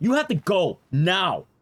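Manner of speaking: imitated angry voice. Retelling a movie scene where a bartender kicks someone out: imitating an angry bartender. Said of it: "she's pissed at him".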